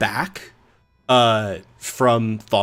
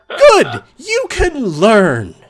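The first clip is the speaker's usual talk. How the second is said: very high, loud, swooping yell; 11 semitones higher, 6 dB louder than usual. In the scene, reacting to a quiet knock from downstairs, a really loud shout. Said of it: "that was really loud".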